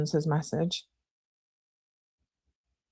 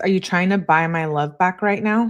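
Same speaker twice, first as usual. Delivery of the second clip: ordinary delivery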